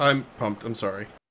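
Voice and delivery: deadpan, flat voice with zero enthusiasm. Claiming to be excited when another speaker says otherwise: flat, unexcited voice. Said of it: "you're not actually pumped".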